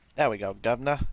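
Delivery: put-on attempted British accent. Joking while setting up the game: attempted British accent. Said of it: "I don't have a British accent, but I can sure try".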